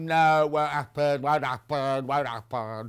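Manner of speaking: slow, silly, funny made-up put-on voice. Retelling own reaction to a message about the festival: funny put-on voice. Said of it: "Don't know why I put that funny voice on".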